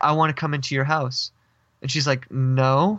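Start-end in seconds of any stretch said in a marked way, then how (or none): 0.0-1.3 put-on strange, crackly voice. Retelling what a strange woman at the screen door said, imitating a strange crackly voice. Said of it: "her voice was like um really strange like crackly".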